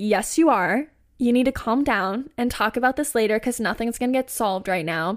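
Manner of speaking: ordinary delivery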